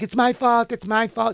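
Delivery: put-on old Italian lady voice. Retelling a street fight, the speaker quotes the woman blaming herself; imitating an old Italian lady. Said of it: "She was like an old Italian lady".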